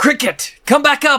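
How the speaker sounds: shrill, loud, very high shout. Calling down to cricket in character to come back up: yelling in character. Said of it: "I yell".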